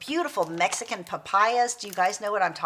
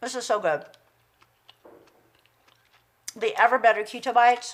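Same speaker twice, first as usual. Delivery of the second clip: talking while eating, between bites. Tasting keto snack bites on camera, the speaker talks while eating. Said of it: "because I'm eating".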